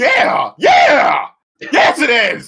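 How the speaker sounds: very loud, very slow, drawn-out, riled up. Answering another speaker surprised at the movie's low rank: worked up. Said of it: "let me calm down real quick".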